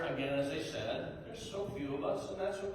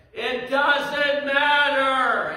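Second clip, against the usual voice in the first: put-on child voice, higher, louder, slower; 7 semitones higher, 11 dB louder than usual. Quoting a small son's reply during a tree hunt, putting on a child's voice. Imitating a three-year-old's voice. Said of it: "in his three-year-old voice".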